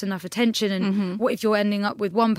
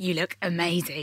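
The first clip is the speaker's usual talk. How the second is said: put-on creepy voice; 3 semitones lower, 4 dB quieter than usual. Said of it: "someone hideous coming up and be like".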